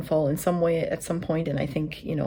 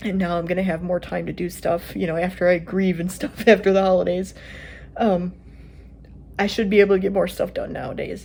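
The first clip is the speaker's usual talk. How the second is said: talking through tears, voice breaking. After caring for him for years, the speaker talks about grieving, crying while talking. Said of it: "Try not to cry, but I am".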